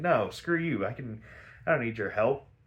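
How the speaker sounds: plain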